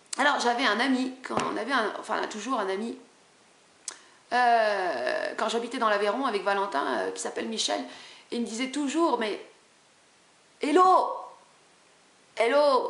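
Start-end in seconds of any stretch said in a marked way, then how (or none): 10.6-12.9 put-on French accent of the south. Speaker recalling a friend's usual greeting, imitating Michel's southern accent. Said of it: "il a un accent du, du, du, du sud".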